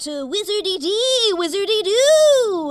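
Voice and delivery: shouted incantation. A player's wizard calls out an arcane incantation when asked: shouted incantation. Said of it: "I shout".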